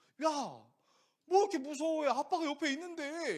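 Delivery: high, loud, embarrassed scolding tone.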